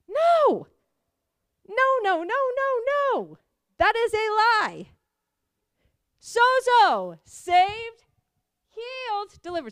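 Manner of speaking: impassioned, emphatic, very slow, drawn-out, swooping delivery. Reacting to someone who blamed their sickness on God: yelling. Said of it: "Sorry, I'm yelling".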